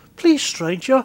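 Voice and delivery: high-pitched Scottish-Irish dwarf character voice.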